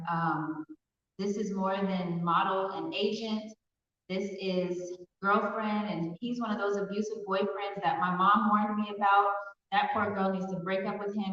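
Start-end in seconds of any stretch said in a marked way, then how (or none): none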